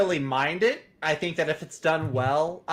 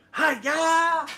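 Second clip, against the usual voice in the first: high, barked battle-cry yell. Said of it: "call him Captain Falcon".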